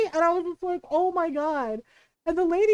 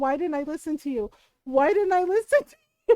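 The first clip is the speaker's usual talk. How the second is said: put-on weeping, tearful, crying, self-blaming tone. Retelling a friend calling from the bathroom: imitating someone crying. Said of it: "called her from the bathroom crying".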